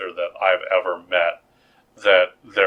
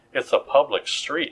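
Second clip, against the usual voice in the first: ordinary talk, nothing marked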